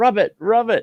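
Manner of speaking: shrill, high, stretched-out shouting. Retelling a leg cramp in the night: retelling yelling. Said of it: "I start yelling at her".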